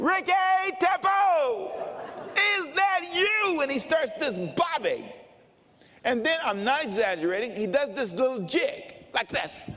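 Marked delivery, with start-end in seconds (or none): 0.0-3.6 very high, drawn-out, acted-out yell. Retelling how an older man spotted him: imitating a man yelling. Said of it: "And he yells my name".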